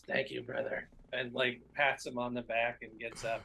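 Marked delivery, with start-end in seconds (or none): 0.1-0.9 whispering in character. Voicing a character thanking an opponent in the ring: whispering. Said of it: "Milk runs over and whispers".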